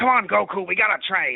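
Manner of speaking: attempted cartoon character voice that falls short. Explaining a failed attempt at a cartoon voice, trying King Kai impression. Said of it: "I can't do a King Kai voice ... I end up just being Oolong".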